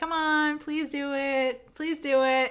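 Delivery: slow, cute, pleading voice. Retelling a scene where one character wins an argument, imitating Big Nung's cute voice. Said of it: "she uses the cute voice".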